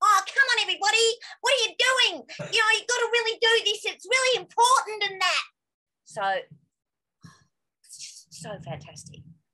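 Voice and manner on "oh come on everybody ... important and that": bossy, very high and raised, loud. Recalling a character she used to play, the speaker demonstrates: bossy Mitzi voice. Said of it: "she was like really bossy and had a voice like this".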